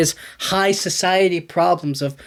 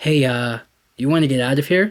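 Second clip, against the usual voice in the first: hushed, whispered voice; 4 semitones lower than usual. Retelling how a man whispers in a woman's ear during a dance, retelling a whisper. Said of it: "he just whispers in her ear".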